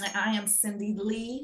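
gentle, soft, warm presenter voice. A podcast host introduces themself in the show's intro voice: soft, warm host voice. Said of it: "you phase into the Cindy Lee voice".

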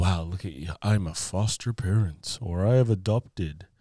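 stuck-up, snooty, self-important, uppity tone. Imitating a hypothetical show-off, the speaker uses a mock snooty uppity voice. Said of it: "that was my snooty uppity voice".

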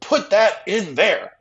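booming, very loud, drawn-out, high scream. Retelling a comedian's joke about a boss: imitating a scream. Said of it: "he just screamed it and left".

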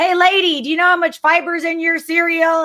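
high-pitched, hollered yell. Speaker recounts a grocery-shopping outing where Regis shouted down the aisles, retelling Regis yelling. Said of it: "Regis is like yelling".

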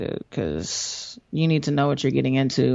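ordinary delivery

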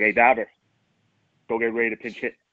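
put-on deep, old, husky calling voice. In the eighth inning, the bench coach comes over; Renee Lashman's deep husky voice. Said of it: "there's his deep old husky voice".

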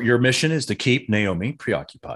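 plain

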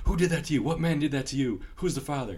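sudden, loud, abrupt hollering tirade. Retelling a man yelling at his pregnant wife: imitating Will Ferrell yelling. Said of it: "he started yelling at his wife".

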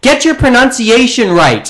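mock high-pitched teen girl yell. Retelling how an audience member screamed at the host: imitating a girl screaming.

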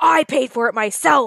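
put-on worked-up, indignant, defensive, angry delivery. Retelling how someone answered a question about renting the place, imitating Jax getting all angry. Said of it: "He's like getting all angry".

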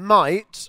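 might set apart and pushed up.

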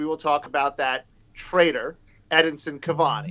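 usual speaking voice

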